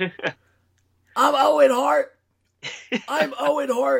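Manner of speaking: very high, rough, gritty voice, slow and drawn out. Answering a request for an Owen Hart impression: high Owen Hart impression. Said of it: "It's high".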